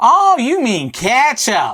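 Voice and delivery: put-on, shrill, very high, loud, drawn-out American accent. Retelling how confused McDonald's staff finally answered, in an American accent. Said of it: "That's my American accent".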